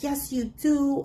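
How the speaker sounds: high, slow, insistent voice.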